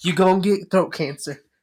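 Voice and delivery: put-on whisper. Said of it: "trying to whisper that to me".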